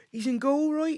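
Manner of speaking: put-on West Country accent. Retelling what a boy's dad said about him: West Country accent. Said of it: "beautiful kind of, uh, West Country accent".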